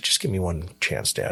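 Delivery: imitated pleading, begging voice. Retelling asking Dad again after he said no: retelling a plea. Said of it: "And I begged him".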